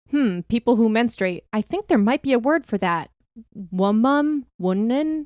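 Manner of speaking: put-on affected, pretentious tone, dripping with sarcasm. Quoting a retweet to the other speaker: imitating a sarcastic, pretentious tone. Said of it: "extremely sarcastic and pretentious".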